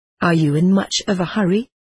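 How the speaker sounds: plain reading voice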